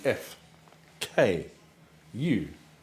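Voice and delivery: F, K, U said slowly, spaced well apart. Streamer introducing their crew, says the letters F K U slowly. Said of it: "You will understand why I said that slowly".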